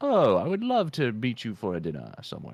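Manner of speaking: laid-on, swooping, put-on English accent. Retelling a male character's voice line to friends, in an English accent. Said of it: "he's like in his English accent".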